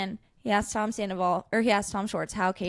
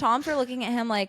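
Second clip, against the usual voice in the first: plain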